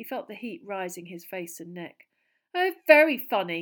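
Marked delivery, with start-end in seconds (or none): 2.5-3.6 very loud, high-pitched, scornful sarcasm. Hermione answers Pansy Parkinson's laughing gang of Slytherin girls: sarcastic. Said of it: "Hermione said sarcastically".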